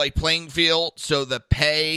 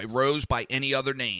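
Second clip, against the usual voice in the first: ordinary delivery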